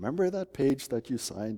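sugary, sweet little voice. Speaker quotes their wife's reply, imitating her sweet little voice. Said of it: "in her sweet little voice".

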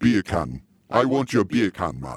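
put-on Jamaican accent. Coaching another speaker how to do it, demonstrating a Jamaican accent. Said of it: "talk in a perfect Jamaican accent".

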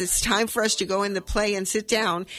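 ordinary delivery

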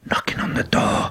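unvoiced whisper.

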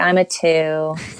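glum, deflated, downtrodden voice. Speaker imitating people who answer with their number, mock downtrodden voice. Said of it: "they usually answer me in a downtrodden voice".

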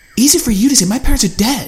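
high, loud, snapped and spat out. Narrator reads Allie answering after being told to calm down, spitting it back at him. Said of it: "She spat back at him".

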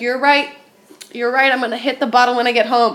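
normal talking voice

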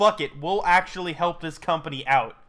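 ordinary delivery

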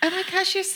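high, gushing mock voice.

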